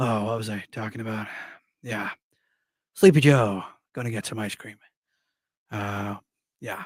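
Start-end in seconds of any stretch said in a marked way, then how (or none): 0.0-4.8 hesitant mumbling voice, pausing between words. Showing off his practiced impression of Sleepy Joe, Sleepy Joe impression. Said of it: "my Sleepy Joe impression got good".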